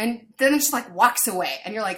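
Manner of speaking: normal talking voice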